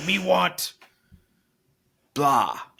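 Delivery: dumb, broken caveman speech. Explaining a program exercise about keeping wants simple: talking like a caveman. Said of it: "talk like a caveman".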